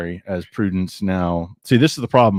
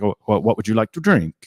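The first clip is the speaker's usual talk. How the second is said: bad, horribly exaggerated, over-the-top Italian accent. Retelling what Walter asked at the table, in a horrible Italian accent as Walter. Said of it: "this is going to be a horrible accent".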